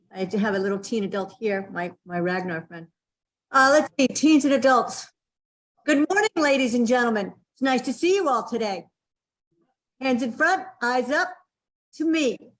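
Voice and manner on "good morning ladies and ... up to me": positive, very clear, explicit classroom teacher voice. Demonstrating a sensei voice for teens and adults: clear teacher voice. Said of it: "that's a wonderful teacher voice".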